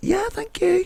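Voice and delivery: small, tiny, very high little voice. Retelling a reply to a drunk man's compliment: imitating own wee voice. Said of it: "A wee voice, not for a laugh".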